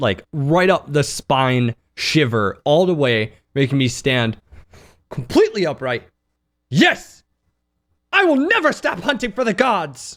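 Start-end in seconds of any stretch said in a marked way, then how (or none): 6.7-10.2 grave, earnest, dead serious, every word stressed. Answering a giant creature in character about hunting for the gods: real serious. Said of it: "so my character gets real serious".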